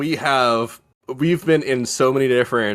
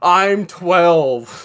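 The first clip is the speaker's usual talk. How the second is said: mock mild pained cry, pitched up, small wail; 5 semitones higher than usual. Speaker reminds a fellow player how they lay blinded on the floor, imitating someone screaming. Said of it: "laying on the floor screaming".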